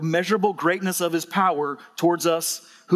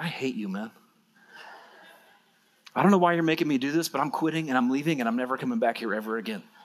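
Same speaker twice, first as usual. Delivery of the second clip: muttered under breath, much lower pitch; 4 semitones lower, 4 dB quieter than usual. Recalling what they never say out loud to Mike: retelling an under-breath mutter. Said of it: "Under my breath".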